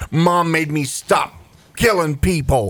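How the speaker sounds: put-on angry kid voice. Retelling what a third grader answered when asked why he was angry; retelling an angry kid. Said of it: "why are you angry?".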